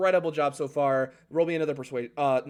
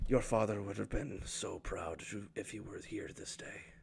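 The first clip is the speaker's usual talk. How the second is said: hushed, very soft, breathy, leaned-in whisper; 6 semitones lower, 12 dB quieter than usual. Narrating as a large old dragonborn hugs you and leans in close, speaking very softly. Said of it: "he leans in close and he says very softly".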